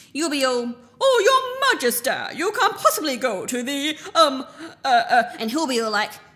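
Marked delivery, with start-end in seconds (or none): 1.1-5.3 higher, stumbling, fumbling stammer. Showing how the other speaker will plead with the king: mocking imitation of Faramir stammering. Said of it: "let me show you how it will go".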